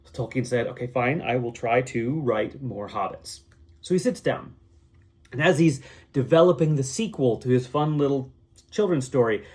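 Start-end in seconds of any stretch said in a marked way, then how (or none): none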